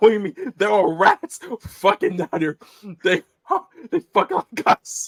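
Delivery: loud, swooping delivery, talking through laughter. Quoting a funny movie line about rats, laughing while talking. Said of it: "I'm sorry, I'm laughing".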